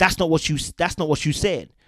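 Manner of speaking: pointed, accusing voice. Retelling what a woman said in an argument: imitating her accusing tone. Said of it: "I'm adding a little bit of a tone to it".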